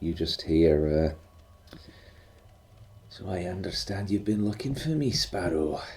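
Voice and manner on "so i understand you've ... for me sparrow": quiet, soft, familiar husky voice. A narrator voices the uncle speaking to Sparrow: soft husky Uncle Leon voice. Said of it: "in a familiar, soft and husky voice".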